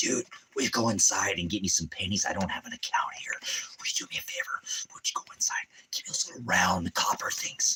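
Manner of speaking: shady, sneaky whispered voice. Asking someone to go inside and get pennies: like a big drug deal. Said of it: "Like it's a big drug deal".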